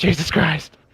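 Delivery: put-on high, panicky exclamation. Voicing a character's inner reaction to a decision: panicked in character. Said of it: "panicking in her head".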